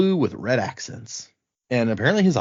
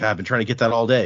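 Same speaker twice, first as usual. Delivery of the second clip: ordinary delivery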